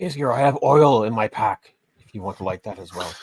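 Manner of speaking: quiet whispered aside. In a role-play scene, a character speaks privately to another character, whispering. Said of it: "I'll whisper to A".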